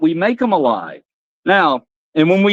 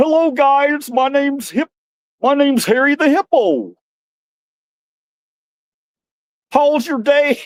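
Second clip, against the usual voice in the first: puppet voice with raised pitch; 8 semitones higher than usual. Doing a puppet show, greeting as the hippo puppet: Harry the Hippo puppet voice. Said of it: "I kinda liked, uh, Harry's voice".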